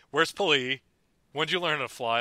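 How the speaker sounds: normal talking voice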